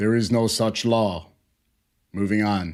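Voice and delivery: mock dead flat deadpan, very low pitch. Retelling a court video, quoting the judge's reply, imitating a deadpan judge. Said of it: "the world's most deadpan judge is just like".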